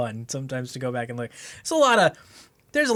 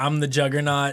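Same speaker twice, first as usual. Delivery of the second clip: normal talking voice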